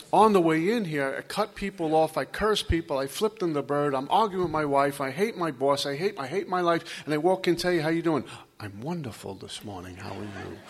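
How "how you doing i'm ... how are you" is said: put-on low, calm, serene voice, much quieter. Speaker acts out greeting people after a bad morning, in a put-on low, serene voice. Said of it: "You have that low, serene voice".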